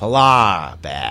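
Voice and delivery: speech with a Boston accent. Taking the first turn at saying a phrase in a boston accent. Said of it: "how would you say polar bear with a Boston accent?".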